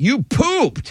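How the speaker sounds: distressed, troubled, upset, high-pitched voice. Demonstrating one phrase said with different emotions, upset. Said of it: "Or you're upset".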